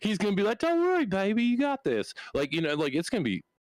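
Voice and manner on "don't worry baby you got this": very high, swooping, reverent and reassuring tone. The speaker imagines Brian teaching the listener to fly, imitating Brian's reverent voice. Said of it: "He just used the reverence voice".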